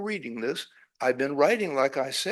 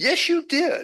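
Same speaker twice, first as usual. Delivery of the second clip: quite irritated, very high and raised; 14 semitones higher, 5 dB louder than usual. Telling a joke, voicing a woman whose foot was stepped on: quite irritated voice. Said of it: "she says in a quite irritated voice".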